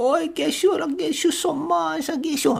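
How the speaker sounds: very high, heavily laid-on fake French accent. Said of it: "Colette's accent drops from".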